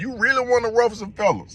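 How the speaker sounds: very high-pitched put-on voice. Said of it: "in my Pimp C voice".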